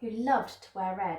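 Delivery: ordinary delivery, nothing marked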